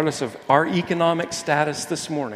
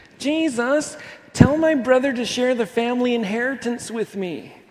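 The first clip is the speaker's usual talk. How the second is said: whiny, complaining voice, pitched up; 9 semitones higher than usual. Retelling a man in a crowd asking Jesus about an inheritance: mock-whiny voice. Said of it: "I'll say it in a whiny voice".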